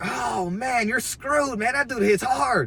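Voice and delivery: very high, shrill, loud, high-pitched acted yelling. Retelling what another man yelled in front of everyone, imitating his loud yelling. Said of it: "He's yelling loud as crap".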